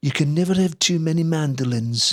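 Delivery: put-on Liverpudlian accent. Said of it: "in his Liverpool accent".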